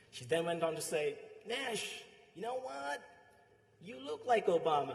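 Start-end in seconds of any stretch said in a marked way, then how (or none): 1.5-5.0 put-on American accent, pitched higher. Retelling what a woman at work said to you, in a put-on american accent. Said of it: "in her American accent".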